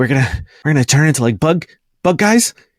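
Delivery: alarmed, panicked, freaking-out worry. Voicing characters who are freaking out a lot; panicked. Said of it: "they kind of like are freaking out a lot".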